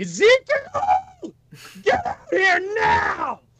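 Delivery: all-out booming, full-lunged yell, very high. Standing in the middle of an empty throne room, Glib calls for Ezekiel, yelling as loud as possible. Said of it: "Glib is going to yell out as loud as he can".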